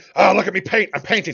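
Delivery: high, loud, hyped, self-mocking gush, giddy kid-like.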